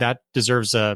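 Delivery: ordinary talk, nothing marked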